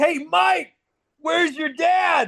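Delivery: shrill, very high heckling yell, acted out. Recounting fans screaming at riders before practice, retelling a fan yelling. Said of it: "the fans were just screaming at the riders".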